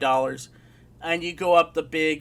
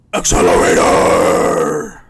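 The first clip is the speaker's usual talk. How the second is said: very deep, low, loud, booming death metal growl; 10 semitones lower, 11 dB louder than usual. Imitating an announcer calling a game name: Jonathan Mangum's death metal voice. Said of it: "really delving into his death metal voice".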